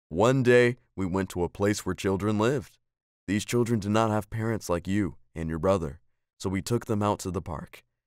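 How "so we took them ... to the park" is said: ordinary delivery, nothing marked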